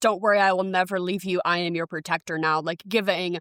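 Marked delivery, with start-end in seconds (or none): 0.0-2.6 put-on motherly, reassuring protective voice. Acting out the hero comforting a rescued kid: imitating Ripley, motherly and reassuring. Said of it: "giving very motherly signals".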